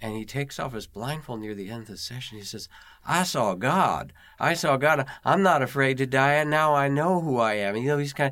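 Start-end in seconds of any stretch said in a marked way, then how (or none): 3.0-7.8 put-on very loud West Virginia coal-country accent. Retelling what a man said at the end of his session, in a West Virginia coal miner's accent. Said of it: "he says it in his West Virginia coal miner's voice".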